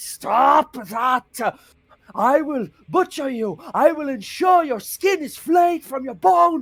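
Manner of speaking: shrill, very high, drawn-out screaming. Voicing a captured prisoner threatening the party: screaming threats. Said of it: "he starts screaming at you".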